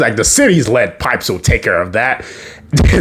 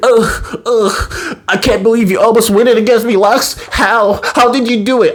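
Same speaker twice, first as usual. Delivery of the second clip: obviously fake pained groaning, pitched up; 9 semitones higher than usual. Retelling a story, voicing Superman talking to Lex: Superman fake pained groaning. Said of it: "faking obviously".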